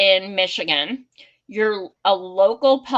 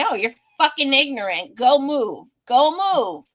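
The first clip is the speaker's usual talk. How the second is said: put-on heated, profane, fed-up cursing yell; 4 semitones higher than usual. Retelling telling a man to move after he poured a drink: retelling her own yelling. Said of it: "I started yelling at him".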